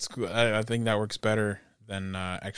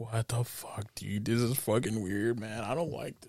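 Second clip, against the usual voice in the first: put-on quiet muttering under breath, quieter; 7 dB quieter than usual. Retelling a reaction to a movie scene: imitating muttering under breath. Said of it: "under my breath".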